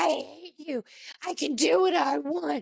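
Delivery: imitated, lashing-out angry yelling. Retelling a scene where a guest yells at everybody: imitating a guest yelling. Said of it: "she's yelling at everybody".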